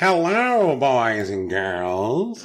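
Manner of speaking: fake spooky horror-host voice, swooping, "girls" stretched. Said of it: "What voice is that?".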